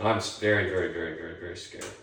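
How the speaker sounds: plain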